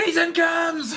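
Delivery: put-on high drunken scream.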